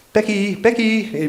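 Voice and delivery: very high-pitched French farmer's call. Telling a story, a farmer calls out a name: French accent. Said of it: "but in a French accent".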